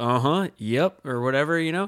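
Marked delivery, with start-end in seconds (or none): 0.0-1.1 put-on low, easy, folksy good-old-boy Southern drawl. Chatting with Southern Lake people, the speaker puts on a Hank Hill folksy drawl. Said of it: "Like a very like Hank Hill sort of like".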